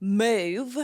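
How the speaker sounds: put-on "move" said with a southern American accent. Quoting a woman from a season telling someone Move, Southern accent on Move. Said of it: "I got my southern accent down".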